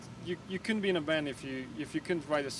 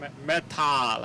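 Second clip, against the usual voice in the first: put-on European accent; 6 dB louder than usual. Telling a story and repeating a word in a put-on European accent. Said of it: "say it with my European accent".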